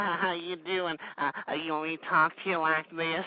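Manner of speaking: small, gentle, hushed, soft put-on voice. Mocking the way he refuses to talk to listeners: put-on little soft voice. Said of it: "talk to you in a little soft voice".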